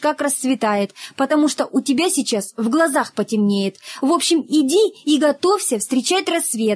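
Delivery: ordinary delivery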